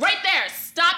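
play-acted, rude, sharp snapping delivery. Retelling a ride where the driver would not stop: retelling snapping at a driver. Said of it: "I snap".

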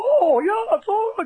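wild, very high, loud crazy voice. Retelling how a Newfoundland acquaintance talked: imitating a really crazy voice. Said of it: "really crazy voice".

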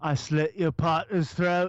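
put-on mushed-together, marble-mouthed Australian accent. Talking about accents, the speaker quotes the Mortal Kombat guy in Kano's Australian accent. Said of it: "that's Australian".

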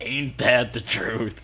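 put-on pirate voice, poorly done. Playing a pirate in a bit, in a bad pirate voice. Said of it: "I can't do this voice".

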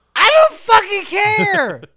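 put-on yelling character voice. Comparing a played clip to a TV character: Charlie from It's Always Sunny impression. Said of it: "like the Charlie from It's Always Sunny".

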